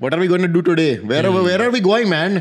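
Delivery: imitated Indian accent. Retelling how he spoke to people after a trip: imitating own past Indian accent. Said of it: "ginamit ko yung Indian accent".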